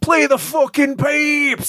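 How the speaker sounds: mock holler, very high-pitched and drawn out. Speaker retells a guy who cracked a beer and yelled at him, retelling a yell. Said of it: "he yells at me".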